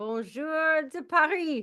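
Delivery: high Parisian French accent. Greeting the other speaker from Paris in French: French accent. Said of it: "Great French accent there".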